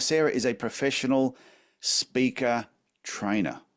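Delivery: very slow, deliberate, drawn out word by word. Introducing a guest's job to listeners: speaking very slowly. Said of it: "I'm saying that very slow for you".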